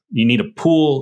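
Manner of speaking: plain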